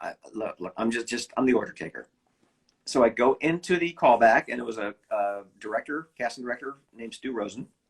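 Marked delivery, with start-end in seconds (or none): none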